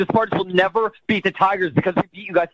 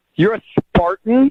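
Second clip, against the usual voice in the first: loud voice dripping with disdain; 3 semitones higher, 5 dB louder than usual. Learning on the phone that the other caller is a spartan: disdainful tone. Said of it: "There is so much disdain in your voice right now".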